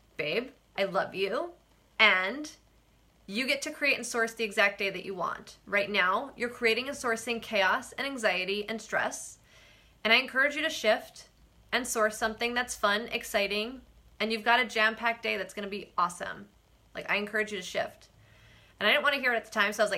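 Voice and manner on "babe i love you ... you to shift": ordinary talk, nothing marked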